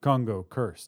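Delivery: plain reading voice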